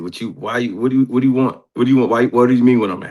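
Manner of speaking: put-on halting, hesitant, repeated speech. Retelling a phone call in which Barry answers: imitating Barry's way of talking. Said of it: "That's how he talked to me".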